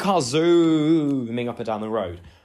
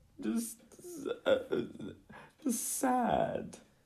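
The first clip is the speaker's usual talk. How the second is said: fake sobbing, higher and quieter; 9 semitones higher, 11 dB quieter than usual. Playing sad in a planned skit when asked: mock crying. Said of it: "resume the crying".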